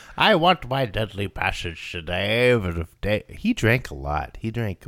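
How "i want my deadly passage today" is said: loud, clownish, declaiming voice. Playing Winston Churchill who demands a deadly passage: Winston Churchill impression. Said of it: "It's like Churchill the clown".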